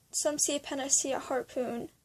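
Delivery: ordinary delivery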